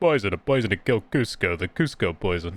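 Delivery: voice dropped low into a cartoon voice. Letting the voice drift into a Kronk impression. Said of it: "starts sounding like Kronk".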